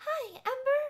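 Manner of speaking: put-on high, breathy baby voice. Mimic the new interviewer you hate greeting Ember backstage, in a whispery high baby voice. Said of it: "She talks with like a baby voice".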